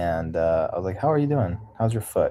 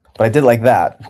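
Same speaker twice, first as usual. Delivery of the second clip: normal talking voice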